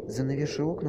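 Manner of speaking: ordinary talk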